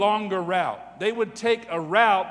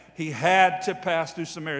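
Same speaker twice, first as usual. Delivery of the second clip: heavy, hard stress on the word had; 3 semitones lower than usual. Rereading a Bible line, with stress on had. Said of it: "Notice the emphasis on the word had".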